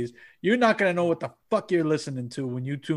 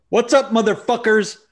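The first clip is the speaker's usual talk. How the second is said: very loud, high, fake podcast-host hype; 9 semitones higher, 9 dB louder than usual. Opening greeting to podcast listeners, with fake enthusiasm. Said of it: "I gave you some fake enthusiasm there".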